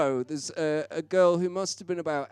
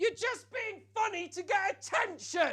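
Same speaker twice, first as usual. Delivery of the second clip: very high, tearful, furious angry scream; 14 semitones higher, 7 dB quieter than usual. Retelling how a crying angry boy in the audience screamed: imitating a screaming crying boy. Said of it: "he screams".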